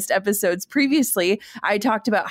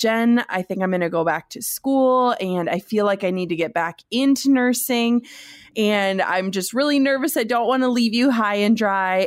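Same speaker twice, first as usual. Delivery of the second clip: ordinary talk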